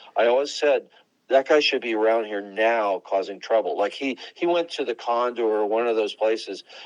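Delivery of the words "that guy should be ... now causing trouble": usual speaking voice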